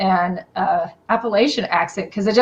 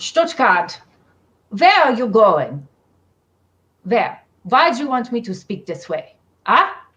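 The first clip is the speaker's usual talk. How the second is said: aggressive, pushy Berlin German accent; 3 semitones higher than usual. Showing off German accents to another speaker, demonstrate an aggressive Berliner accent. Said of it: "I can do a Berliner accent".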